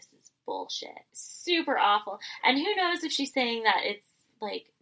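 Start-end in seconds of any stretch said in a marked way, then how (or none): 0.0-0.9 hushed whisper under the breath. Quoting a line said between the last two left: imitating a whisper. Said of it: "she whispers".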